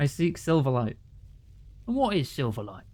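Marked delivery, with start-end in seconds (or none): 1.9-2.7 goofy, dumb-sounding put-on character voice. Voicing a character who answers the speaker's request, in a stupid character voice. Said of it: "I gave this guy a stupid voice".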